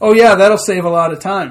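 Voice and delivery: ordinary talk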